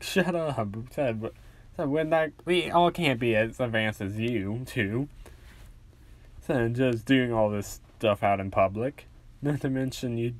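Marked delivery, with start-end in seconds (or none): none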